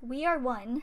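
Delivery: ordinary delivery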